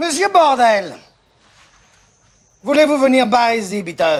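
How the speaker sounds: put-on German accent. Recalling a family joke where everyone has a role, speaker does a German accent. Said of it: "je prends très bien l'accent allemand".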